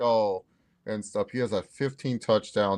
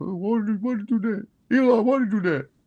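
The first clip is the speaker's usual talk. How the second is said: fed-up, very high, annoyed and exasperated tone; 11 semitones higher than usual. Imitating Peyton on the Manicast reacting to Bryce Young: annoyed Peyton Manning impression. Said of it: "annoyed watching them".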